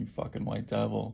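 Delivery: normal talking voice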